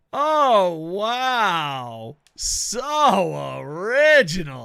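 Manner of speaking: booming, slow, swooping heavy sarcasm, long drawn-out "So". Showing how the phrase must be said: most sarcastic tone possible. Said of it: "you have to say it, like, the most sarcastically way ever".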